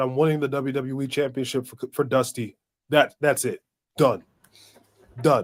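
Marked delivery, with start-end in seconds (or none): none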